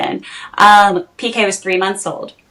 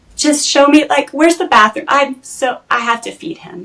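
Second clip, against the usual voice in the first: put-on urgent, distressed, high voice, breaking down; 6 semitones higher than usual. Retelling own words to a cast member, reenacting own distressed plea. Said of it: "And I'm breaking down".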